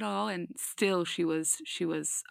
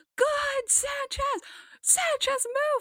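screaming, high pitched. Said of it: "he was just screaming Sanchez the whole time".

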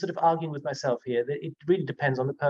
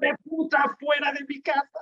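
mock high, furious screaming in Spanish; 12 semitones higher than usual. Retelling how an old man on a terrace screamed at visitors: imitating someone screaming in Spanish. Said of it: "basically just screaming his head off".

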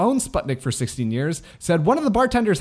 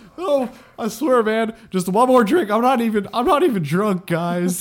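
put-on acted drunk ghost voice, pitched higher; 5 semitones higher than usual. Playing a drunk ghost who begs for one more drink: acting as a drunk ghost. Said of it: "if you saw a drunk ghost".

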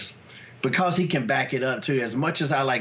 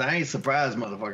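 usual speaking voice

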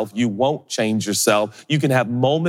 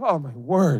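put-on choked-up, tearing-up voice, higher; 4 semitones higher than usual. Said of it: "I start tearing up".

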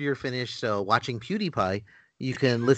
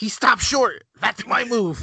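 very high, comic character voice, pushed way up; 10 semitones higher, 4 dB louder than usual. Quoting a Seinfeld line right after the others joke: Jerry Stiller impression. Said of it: "Best Jerry Stiller impression ever".

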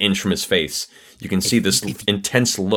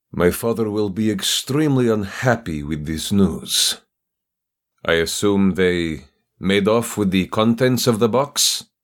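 put-on character voice with a Russian accent. The narrator voices Petrov responding to the group: Petrov's Russian voice. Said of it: "this Russian figure goes".

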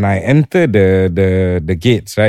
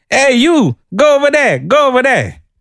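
very high, yelled delivery. Retelling how an airport security officer ordered him away: imitating a guard shouting. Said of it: "he shouts at me and he says".

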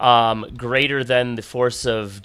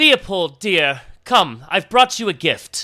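booming, amplified voice, higher pitch; 7 semitones higher than usual. Narrator voices a woman the player recognizes calling out: very loud, magically loud. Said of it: "very loud, magically loud".

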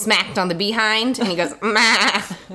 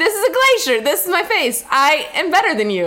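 put-on Icelandic accent, pitched up; 8 semitones higher than usual. Retelling what a man from Iceland quoted from a video: Icelandic accent. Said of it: "he said it in the, like, Iceland".

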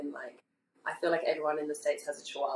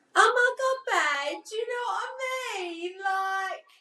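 high, slow, over-the-top mock Essex accent. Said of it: "I hate a real, like, Essex accent".

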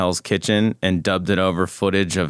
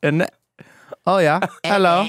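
very high, clumsy, bad fake Cockney accent; 11 semitones higher than usual. Asked to say hello in an accent, giving a bad put-on accent. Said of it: "Are bad at it".

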